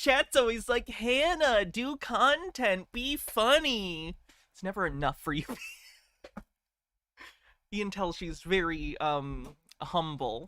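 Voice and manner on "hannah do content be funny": whiny, condescending, drawn-out, funny voice. A streamer mocks how her chat talks to her, in a mock-whining, condescending voice. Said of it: "condescending tone like that with a whining voice".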